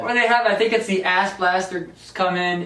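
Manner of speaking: plain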